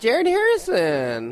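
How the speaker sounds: put-on very high, very loud, shrill Midwest accent. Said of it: "the Jared Harrison, it was very, uh, Midwest".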